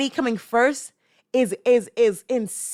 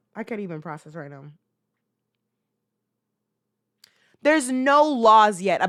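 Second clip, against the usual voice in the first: upset, worked up, heated angry venting; 2 semitones lower than usual. Venting about what she did, heated. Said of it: "I'm heated, bro".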